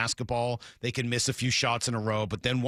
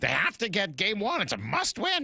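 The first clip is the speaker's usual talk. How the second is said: put-on voice, quacking, high and swooping; 8 semitones higher than usual. Quoting what Lyle said before the series, as a Lyle impression. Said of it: "your Lyle impression".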